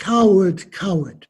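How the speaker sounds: ordinary delivery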